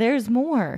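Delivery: full, hyped TV pitchman infomercial announcer voice. Pitching a water bottle for traveling, in an infomercial voice. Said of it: "in my very infomercial voice".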